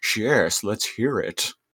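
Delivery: put-on villain robot voice. Retelling a scene where Megatron listens in: Megatron voice. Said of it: "Megatron is listening in, and he's all like".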